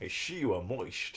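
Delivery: impression of a Scottish film star's voice, Scottish accent.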